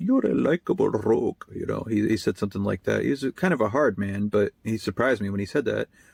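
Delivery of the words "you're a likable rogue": put-on Indian-accented voice. Quoting what her immigrant father once said to him, imitating an Indian accent. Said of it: "He spoke with an Indian accent".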